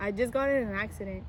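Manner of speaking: ordinary talk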